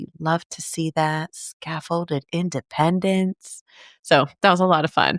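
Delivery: jazzy, smooth voice. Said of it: "when you tap into your jazz voice".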